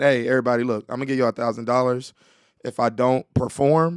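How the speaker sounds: ordinary talk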